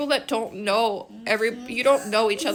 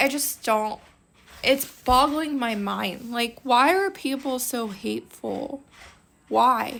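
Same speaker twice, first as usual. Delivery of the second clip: voice on the edge of crying, holding back tears. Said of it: "I'm trying not to cry".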